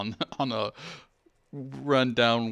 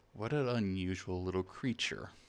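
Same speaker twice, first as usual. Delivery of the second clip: very soft, gentle, calm voice; 2 semitones lower, 8 dB quieter than usual. Game master voicing someone holding the player's creature, in a very soft calm voice. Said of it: "a very soft, calm voice".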